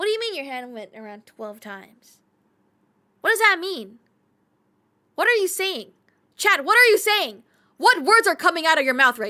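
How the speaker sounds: yelling at full volume, very loud, high-pitched. The speaker questions Chad, shouting. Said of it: "I should stop shouting at you".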